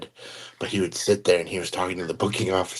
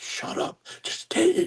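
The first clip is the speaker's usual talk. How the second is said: put-on angry outburst, higher. Retelling what a man said during an unclothed search: imitating someone angry. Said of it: "so pissed".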